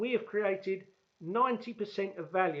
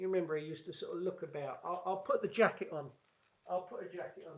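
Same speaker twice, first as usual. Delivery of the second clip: usual speaking voice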